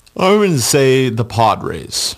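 yawning while talking. Giving an MLB trade prediction, yawning while talking. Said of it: "I was yawning for a second".

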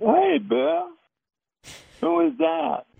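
very high, rough-edged voice with some rasp. Retelling a story, the speaker voices Willie Mays answering the door: Willie Mays high-pitched voice. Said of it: "in that high-pitched voice".

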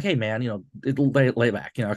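normal talking voice

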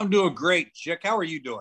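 sarcastic tone of voice. Answering a greeting from another speaker: sarcastic tone. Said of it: "That's so sarcastic".

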